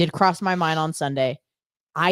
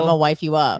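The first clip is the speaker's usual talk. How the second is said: usual speaking voice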